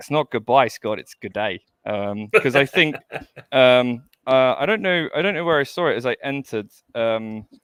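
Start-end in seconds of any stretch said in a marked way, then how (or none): 0.0-1.6 fake, put-on Australian accent. Retelling the goodbye video they made, the speaker does a put-on Aussie accent. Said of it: "so I I did do an Aussie accent".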